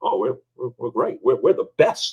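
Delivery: whispered, breathy, stammering, confident boastful tone. Imitating business owners asked how they are doing: imitating a confident business owner. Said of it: "ninety-two percent of business owners".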